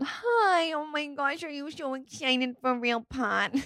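put-on soft, slow, cooing baby talk. Podcast host greeting listeners at the episode start in a baby-talk voice. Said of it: "Sounded like I was talking to a child".

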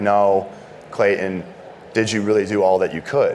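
normal talking voice

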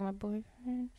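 said really quietly, hushed, barely audible. Explaining how it feels to call someone your boyfriend, said really quietly. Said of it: "You like say it really quietly".

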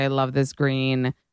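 plain

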